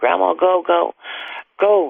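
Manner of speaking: high, urgent, hysterical screaming. Retelling how she screamed for Grandma to go, imitating hysterical screaming. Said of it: "she just was screaming hysterical".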